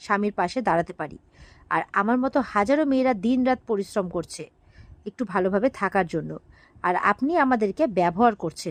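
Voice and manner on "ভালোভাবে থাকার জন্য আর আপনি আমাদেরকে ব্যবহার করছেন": ordinary delivery, nothing marked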